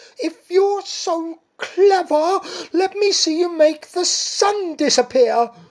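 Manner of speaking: shrill, snappish, sniffy squawk. Narrator reading a story voices Missus Pigeon challenging Mister Cat: annoyed squawk. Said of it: "[name] sniffed. / she asked, / she snapped".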